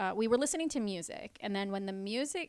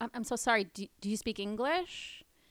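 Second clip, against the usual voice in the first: mock gentle polite tone. Retelling asking a bar customer a question: retelling own inoffensive polite words. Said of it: "in the most unoffensive way possible".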